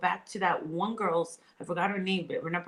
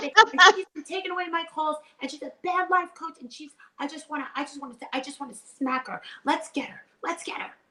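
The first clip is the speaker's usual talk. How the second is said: put-on, very high, boiling-over, temper-lost rant; 10 semitones higher, 4 dB louder than usual. Doing an impression, requested by the other speaker, of her losing it: imitating someone losing their temper. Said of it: "that's what I would do an impression of".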